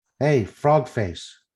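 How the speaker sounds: loud, jeering, taunting yell. Taunting a big axe-wielding foe in character: yelling a taunt. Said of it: "you're just yelling at him?".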